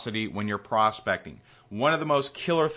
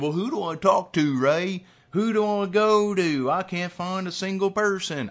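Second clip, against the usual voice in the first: bad put-on accent of unknown origin, pitched up; 8 semitones higher than usual. Voicing an imagined listener's question to the host, terrible unidentifiable accent. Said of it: "I have no idea what accent that was, but it was terrible".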